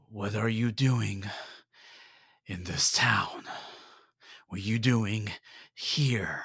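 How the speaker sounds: gruff, rough-sounding voice. A man in flowing robes speaks to the newcomer in town, gruff voice. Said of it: "he speaks with a gruff voice".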